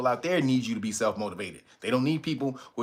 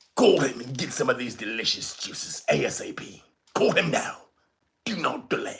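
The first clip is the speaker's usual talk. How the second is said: put-on British accent. Urging listeners to call a juice seller, in a put-on British voice. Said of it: "Had to put my British voice on for you".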